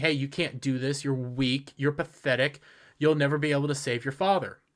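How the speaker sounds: usual speaking voice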